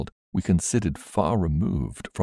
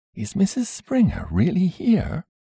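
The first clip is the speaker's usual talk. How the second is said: gentle, mild voice pitched very high; 13 semitones higher than usual. Reading a story aloud, a visitor at the door asks in a gentle voice. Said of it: "a gentle voice said".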